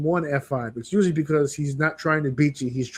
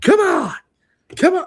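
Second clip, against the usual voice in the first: very high-pitched, loud scream; 7 dB louder than usual. Retelling a match, the speaker imitates Brock Lesnar screaming at himself. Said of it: "He's screaming at himself".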